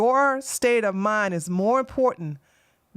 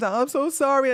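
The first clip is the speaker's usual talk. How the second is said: put-on sobbing, higher; 5 semitones higher than usual. Retelling a man's apology while he cried on his knees: imitating someone crying.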